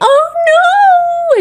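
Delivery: acted-out, very high sobbing wail. Retelling a reaction to bad news seen on a live stream: imitating sobbing and wailing. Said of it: "She just starts sobbing, wailing".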